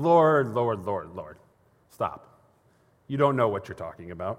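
very patronizing, condescending, humoring tone. Retelling Jeremiah interrupting God, in a mock-patronizing Jeremiah voice. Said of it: "I hear that in like a very patronizing voice".

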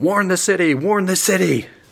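shrill, very high shouted yell. Narrating a younger adult running off toward the city, voice them yelling a warning. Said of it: "And they're yelling".

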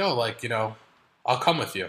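playful joking manner. Recalling offering to join girlfriend at her pedicure, retelling a joking remark. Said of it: "I jokingly said".

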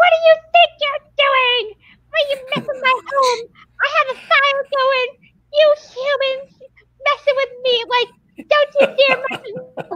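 very high-pitched, tiny put-on gnome voice. Acting out what a little gnome said in their head, in a little gnome voice. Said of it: "this little gnome goes".

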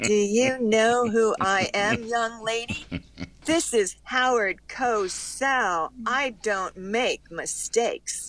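very slow, deliberate delivery, every word drawn out. Retelling a phone call where Howard Cosell scolds her: imitating Howard Cosell. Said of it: "you heard that voice".

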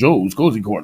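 low, deep, bass-register speaking voice. Retelling a saxophone player's advice to go to a club: William Terry's low voice. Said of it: "he's got that low voice".

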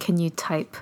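mock whispering. Retelling a scene where a man asks a woman something: imitating a whisper. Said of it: "he whispers in her ear".

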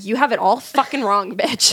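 normal talking voice

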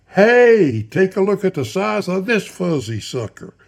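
very loud, high holler near top of voice. Reading a man's line as he spots the narrator, in a very loud voice. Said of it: "near the top of his very loud voice".

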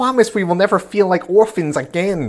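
high, strained, unconvincing fake child voice. Speaker mocks one of the worst lines in the series, doing 9's fake kid voice. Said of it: "voice actor trying to be a kid".

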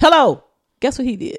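loud, sudden yell. Trying to get the other speaker's attention mid-story: yelling. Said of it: "I'm sorry, I had to yell".

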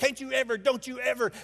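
acted-out high-pitched screaming, like a yelling parent. Imitating parents at a little league soccer game: imitating parents screaming at kids. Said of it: "out there screaming, yelling at their kids".

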